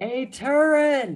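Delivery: put-on drunken yell, high and loud. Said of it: "Simon yells".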